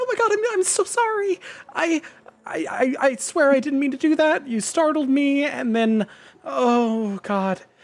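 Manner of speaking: frantic, very high, squeaky panicked voice. Voicing a character who just hurt a player: high-pitched panicked squeak. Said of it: "the high-pitched squeak of panic".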